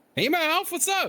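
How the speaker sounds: loud talking. Testing mic levels after being asked to talk a little loud: talking loudly. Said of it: "just talk a little loud".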